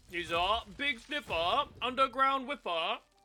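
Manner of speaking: high joking voice. Joking with friends in a game queue, imitating Mango. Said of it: "That's my impression of, of Mango".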